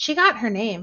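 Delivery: plain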